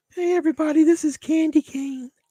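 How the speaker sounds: put-on very high-pitched, girly female voice. Reenacting a scene where a man is made to voice a woman, in high-pitched Candy Cane voice. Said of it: "trying to do that high pitched female voice".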